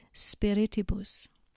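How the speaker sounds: spiritibus with the second syllable ri leaned on. Teaching how to pronounce a four-syllable noun, stress on second syllable 'ri'. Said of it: "the second syllable needs to be emphasized".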